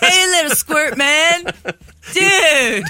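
very high cartoon sea turtle voice. Quoting the sea turtle from Finding Nemo in conversation: Crush from Finding Nemo voice. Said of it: "sounds like the turtle from Finding Nemo".

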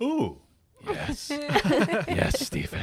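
very high, slow, stretched-out swooping voice. Imagining a reaction to a hat being flung past his face: imitating Steven Spielberg. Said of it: "and Steven Spielberg's like".

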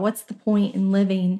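normal talking voice

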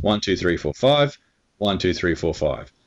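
rhythmic delivery in two even sets of five beats.

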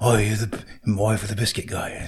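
put-on husky voice. Retelling what a man said: imitating a husky voice. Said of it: "he's got that husky voice".

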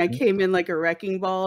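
usual speaking voice

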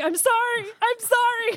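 mock out-of-breath, very high, very slow apologetic voice. Retelling someone running towards the car: imitating Caitlin out of breath. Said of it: "completely out of breath running towards us going".

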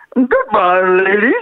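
talking like a whale. Saying goodbye, the speaker tries to speak whale: whale voice. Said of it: "Can I try to speak whale?".

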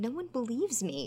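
soft, pained, wounded lament. Retelling what a character says to another character, imitating a pained voice. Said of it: "he says it in such like a pained way".

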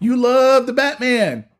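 very high-pitched, slow, drawn-out drawl. Teasing another speaker about loving Batman, as Rod Tidwell. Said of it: "in my best Rod Tidwell impersonation".

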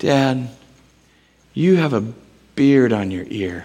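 tender, adoring, sweet, loving little voice. A father retells what his daughter said to him, imitating Novella's loving voice. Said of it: "with the most loving voice".

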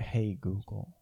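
hushed whisper. Saying the wake words quietly so the device won't listen: whispering. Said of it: "I'm trying to whisper".

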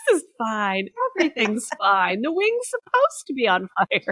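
loud, wildly swooping, crazed villain voice. Joking about smiling through turbulence: Joker voice. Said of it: "Like the Joker".

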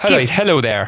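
put-on Irish-accented voice. Speaker slips into an accent while talking, greeting in an Irish accent. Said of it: "Definitely Irish".

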